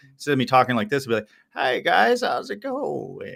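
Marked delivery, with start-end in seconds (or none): 1.6-3.4 very drawn-out, slow, raspy creaky vocal fry. Showing what deliberately frying your vocals sounds like, raspy vocal fry. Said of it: "fry their vocals on purpose, there'd be this rasp to it".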